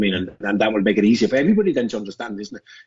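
plain

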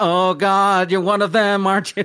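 obviously fake American accent, very high and loud. Recalling how an actor tried an American accent in a movie, fake American accent. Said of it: "his American accent of just like".

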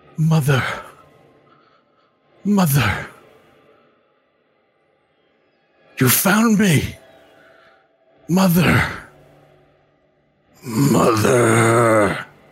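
very slow, drawn-out, high calling out. Voicing a mysterious voice that calls out to a player: voice calling out. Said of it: "a voice calls out to you and says".

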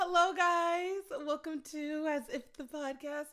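spoken through a big grin, high and loud. A nervous podcast host practices the show's opening line, grinning too much. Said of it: "I was grinning too much".

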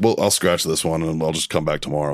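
plain

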